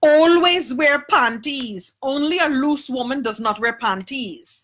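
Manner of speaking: put-on slight Guyanese accent. Retelling a lesson a woman from Guyana gave, imitating a slight Guyanese accent. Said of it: "she had this little accent and she said".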